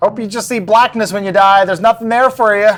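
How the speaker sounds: shouting in character voice. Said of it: "Mister Skittles yells".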